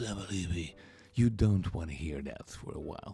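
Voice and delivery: voice nearly gone, heavy and congested. Showing how the voice sounded with a heavy cold: imitating voice with a heavy cold. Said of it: "My voice sounded something like this".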